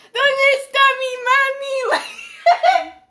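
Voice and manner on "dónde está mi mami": very high, very loud, shrill screaming sob in Spanish. Retelling being screamed at for needing glasses, imitating crying and screaming. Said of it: "I just started crying and screaming in Spanish".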